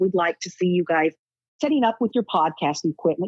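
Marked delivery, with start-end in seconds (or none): none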